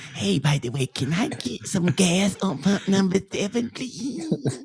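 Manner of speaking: put-on toddler-style babyish baby talk voice. Answering a would-you-rather question, he shows how he would sound: baby voice. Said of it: "I'm going to sound like this".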